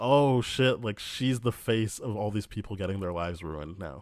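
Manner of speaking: ordinary delivery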